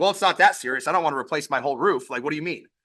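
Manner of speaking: fast, prickly, defensive tone. Speaker acting out a homeowner's reply when a leak is called serious, imitating a defensive reply. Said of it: "there's a possibility that they will get defensive".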